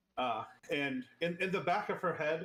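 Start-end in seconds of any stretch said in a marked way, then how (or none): none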